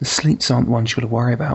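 whispered in a character voice. Voicing a character who taps a player's shoulder: whispering in character. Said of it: "taps you on the shoulder and whispers into your ear".

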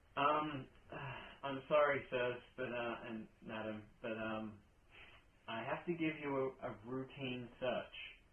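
awkward, embarrassed, sheepish.

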